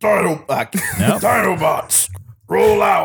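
high-pitched robot commander voice. Challenged by friends to do Optimus Prime, the speaker gives an Optimus Prime impression. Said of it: "Optimus Prime".

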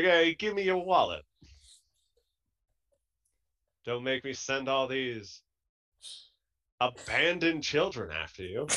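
1840s Victorian street ruffian voice. Speaker imagines a man coming at them with fisticuffs, 1840s Victorian ruffian voice. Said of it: "like he's an 1840s ruffian in like Victorian England".

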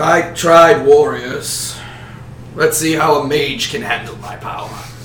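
deep, dark voice. A game master voices Grund addressing the players, deep, dark Grund voice. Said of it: "a deep, dark voice, you hear".

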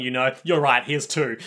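ordinary talk

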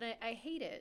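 normal talking voice

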